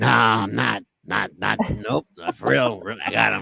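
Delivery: very low, gravelly, raspy voice. Speaker retells what a man answered him, imitating a raspy voice. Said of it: "he had a raspy voice".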